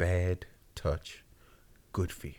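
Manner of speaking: slowed-down, breathy whispered delivery. Repeating a proposed title out loud again, as asked, with slower delivery. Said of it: "Say it slower".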